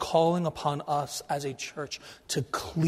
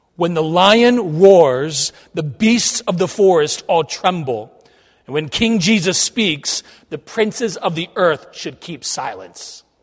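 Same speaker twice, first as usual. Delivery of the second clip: very loud, full-voiced, booming delivery; 9 dB louder than usual. Retelling how a man looked King George in the eye, retelling a loud declaration. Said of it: "with a loud voice he says this".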